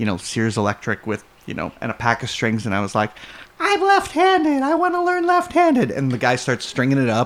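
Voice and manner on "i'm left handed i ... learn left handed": put-on very high, small eight-year-old child's voice. Retelling asking for a left-handed guitar at age eight, in a little kid voice. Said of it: "that was my little 8-year-old voice".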